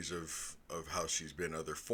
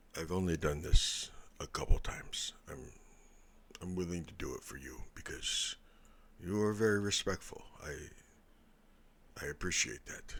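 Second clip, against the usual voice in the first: leaned-in stage whisper. Voicing a character who leans in close to Nova: whispering in character. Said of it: "he's gonna whisper".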